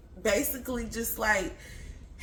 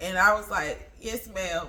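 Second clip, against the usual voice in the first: ordinary delivery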